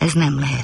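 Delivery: ordinary delivery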